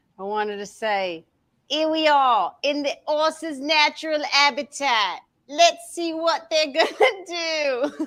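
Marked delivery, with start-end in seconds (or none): 1.7-8.1 put-on British wildlife-host voice, much higher. Narrating like a wildlife host, a speaker does a Steve Irwin impression in British accent. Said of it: "that's a British accent for Steve Irwin".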